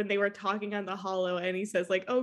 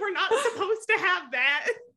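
mock very high-pitched, panicky, fretting voice; 10 semitones higher than usual. Imagining a character fanning away smoke: imitating Reese freaking out. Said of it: "Reese would be freaking out".

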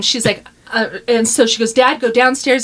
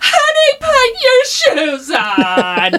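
play-acted, very high, very slow, drawn-out crying scream; 13 semitones higher than usual. Retelling being unable to walk while Daryl tries to get the speaker's shoes on, retelling Daryl screaming. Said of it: "He's screaming".

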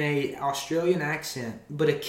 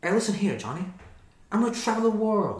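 put-on pitched-up classic old-movie accent; 5 semitones higher than usual. Chatting about a great movie, show the other speaker his accent in an It's a Wonderful Life accent. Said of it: "That accent that he has?".

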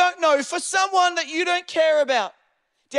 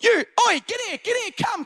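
mock yelling, higher and slower; 5 semitones higher than usual. Retelling the wife chasing a guy down an alleyway, retelling yelled commands. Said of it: "She's talking to him like a dog".

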